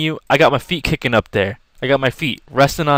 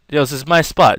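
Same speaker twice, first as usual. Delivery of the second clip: ordinary talk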